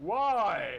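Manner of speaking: booming villain voice, word "why" drawn out. Answering someone who asks for a photo, in a Darth Vader voice. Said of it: "in a Darth Vader voice".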